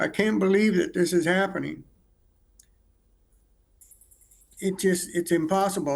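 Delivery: words coming through tears, crying while speaking. Answering how he reacted to his daughter's death, crying while talking. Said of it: "I'm still crying".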